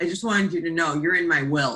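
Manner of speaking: put-on gruff male voice. Retelling what a man said to the speaker, in a gruff man's voice. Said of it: "this really gruff man's voice".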